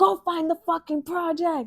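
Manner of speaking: put-on play-acted grandpa voice, high-pitched yelling. A speaker retells a friend's grandpa yelling at both of them; retelling grandpa's yell. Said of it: "he was yelling at both of us".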